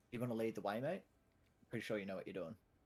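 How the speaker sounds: barely audible, very quiet half-whisper. Speaking in character, asking another character to lead the way: half-whispering as quietly as possible. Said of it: "I sort of whisper as quietly as I can".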